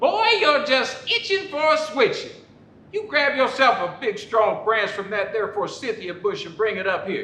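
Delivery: high, scolding, angry mad mother voice. Telling his childhood story, the speaker voices his mama scolding him, mad mama voice. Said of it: "in her mad mama voice".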